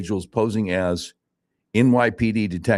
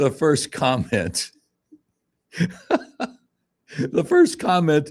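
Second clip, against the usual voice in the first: giggling, laughing through the words, pitched up; 7 semitones higher than usual. Starting to read a funny comment on an article, laughing while talking. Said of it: "I'm laughing".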